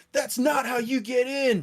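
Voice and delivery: loud, very high-pitched shouting. During combat, the speaker voices the last guy replying to a call to give up, shouting back. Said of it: "he'll shout back".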